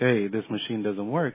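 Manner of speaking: usual speaking voice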